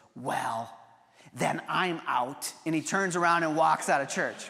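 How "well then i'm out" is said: very slow, loud, carrying stage whisper. Retelling the son's reply during communion: imitating a louder stage whisper. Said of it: "in a louder stage whisper".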